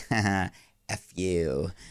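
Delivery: put-on taunting tone. Retelling what she said on the film to the man in the suitcase: retelling a taunt. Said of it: "She's like taunting him".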